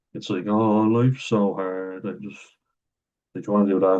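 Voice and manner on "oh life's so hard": put-on miserable, moany tone. Describing their past self as a miserable, moany prick, mock-moaning whine. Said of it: "moany prick".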